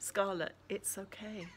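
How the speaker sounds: plain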